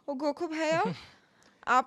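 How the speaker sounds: put-on Hindi accent, spoken the anglicized way. Mocking a girl who shops in Khan Market, in a put-on anglicized accent. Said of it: "एक एंग्लोसाइज्ड एक्सेंट में बोलेगी ... बोलेगी ऐसे के".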